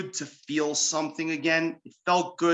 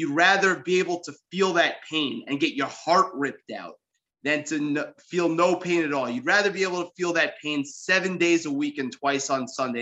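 usual speaking voice

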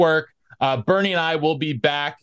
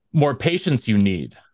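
put-on alien master voice, lower; 4 semitones lower than usual. Calling the other speaker a master, then answering in a Yoda voice. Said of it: "you're my Yoda".

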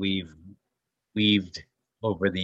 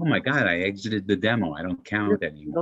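ordinary talk, nothing marked

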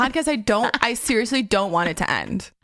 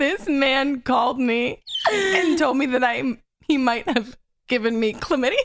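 talking through giggles, words broken up by laughter; 2 semitones higher than usual. Quoting what she said about a man, laughing while speaking. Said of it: "I can't say without laughing".

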